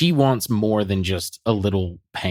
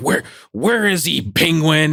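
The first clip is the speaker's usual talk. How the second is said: high-pitched heroic superhero voice; 8 semitones higher, 5 dB louder than usual. Acting out a made-up scene where Batman demands to know where Penguin is: imitating Batman. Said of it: "he's like".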